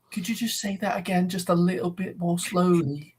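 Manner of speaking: put-on English woman's accent. Retelling an English woman talking to a Scottish woman: imitating an English woman's accent. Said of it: "an English woman talking to a like a Scottish woman".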